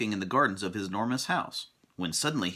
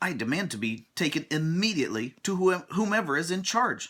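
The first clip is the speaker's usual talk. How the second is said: indignant, insistent, angry, pitched-up voice; 8 semitones higher than usual. Narrating a story, voicing a character's line to a goblin, angry. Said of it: "said Mister Uppity angrily".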